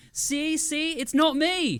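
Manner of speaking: put-on Australian accent. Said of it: "he did a great Australian accent".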